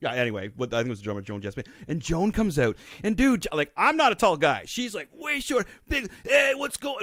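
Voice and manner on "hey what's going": very high, heavy exaggerated New York accent. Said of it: "Big New York accent".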